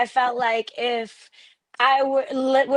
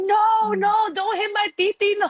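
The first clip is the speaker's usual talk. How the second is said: put-on very high, drawn-out, wailing child's scream; 9 semitones higher than usual. Retelling hearing a little niece at a fight: imitating niece screaming. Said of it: "hearing her screaming".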